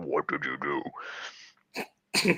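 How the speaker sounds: whispered, disguised voice with modulator sound. Joking about a hostage video, speaking through a voice modulator. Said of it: "I have the voice modulator".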